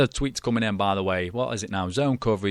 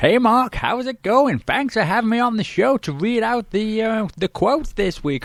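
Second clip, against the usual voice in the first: put-on Texan accent, much higher pitch; 10 semitones higher than usual. Introduced as a Texas cousin, greeting the host, in Texas Teece American accent. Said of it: "with a bit of American accent".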